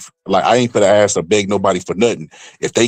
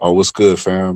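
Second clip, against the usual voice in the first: mock level, flat, deadpan, unexcited monotone. Describing a boxing content creator reading a comment, imitating a flat monotone. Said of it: "he wasn't excited or nothing. He was like uh like a monotone".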